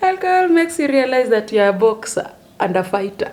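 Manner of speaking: speaking through giggles. Talking to viewers who may comment below, laughing while talking. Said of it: "I'm sorry, I'm laughing".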